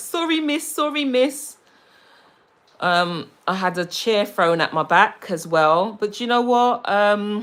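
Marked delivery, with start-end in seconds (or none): 0.0-1.6 put-on high, childlike boy's voice. Retelling how a seven-year-old apologized after cutting her hair: imitating a child apologizing. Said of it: "And he's like".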